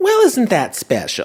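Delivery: very high, put-on churchy lady voice. Trying an impression for the first time since sixth grade: Church Lady impression. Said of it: "I could do a pretty decent church lady impression".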